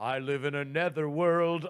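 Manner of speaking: put-on, acted bogeyman voice. Imagining how Oogie Boogie Man would answer a meteor threat: Oogie Boogie Man voice. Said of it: "Oogie Boogie Man, who's like".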